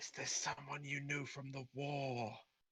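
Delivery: hushed, very quiet half-whisper. Asking a character a question in the game: half-whispering. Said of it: "I'm gonna whisper".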